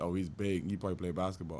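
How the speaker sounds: normal talking voice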